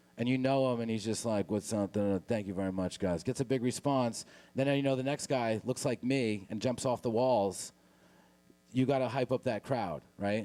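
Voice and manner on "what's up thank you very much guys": low, flat, dead-level monotone. Describing the comedian who was just on, mimicking a monotone comedian. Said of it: "the guy that was just on was monotone".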